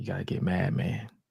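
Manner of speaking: quiet, calm, unhurried, very soft whisper. Retelling what one man whispered to another before walking away: retelling a calm whisper. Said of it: "he whispered to him".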